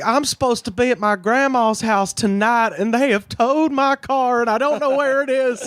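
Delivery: fake, put-on Southern accent, pitched very high. Calling an emergency line about a towed car, in a put-on southern accent. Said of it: "I put on the fucking southern accent".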